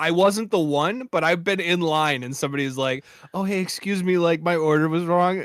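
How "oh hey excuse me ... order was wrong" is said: acted, extra-polite, gentle, courteous complaining voice. Retelling a customer in a drive-thru line saying their order was wrong: imitating someone being very polite. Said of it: "in the nicest way".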